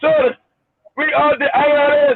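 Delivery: slow put-on Indian accent. As if you're recounting a ridiculous scam call, doing the caller's voice with a stiff, formal accent to mock it. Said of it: "you're the I R S with an Indian accent?".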